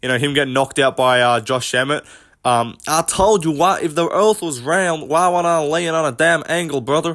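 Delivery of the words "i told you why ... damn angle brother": put-on rural American country accent. Quoting a flat Earth meme, in a Bryce Mitchell accent impression. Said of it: "that's a painful impression to listen to".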